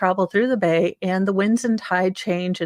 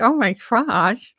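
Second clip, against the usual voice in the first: dorky, geeky teenage cartoon nerd voice; 3 semitones higher than usual. Retelling a teenage boy reacting at the movie theater, in a Simpsons nerd voice. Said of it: "he kind of had this voice like the S the Simpsons nerd".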